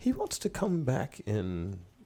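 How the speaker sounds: put-on strong, sing-song, very British accent, not posh. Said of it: "a young lady with a very, uh, British accent".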